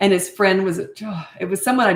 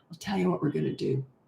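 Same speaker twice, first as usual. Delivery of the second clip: very quiet, hushed, menacing stern tone; 2 semitones lower, 10 dB quieter than usual. A mother shows how she talks when disciplining: very quiet disciplining voice. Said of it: "I get real quiet".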